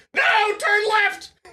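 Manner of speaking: screaming, very high and loud. Speaker voicing their own muscle memory's protest, screaming. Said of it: "I need to stop screaming like that".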